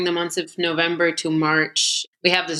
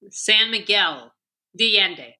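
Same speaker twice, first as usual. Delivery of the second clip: thick, heavy put-on American accent; 3 semitones higher than usual. Asked by a co-host to repeat it for u.s. listeners, thick gringo accent. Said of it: "Can you say that in like thick gringo accent".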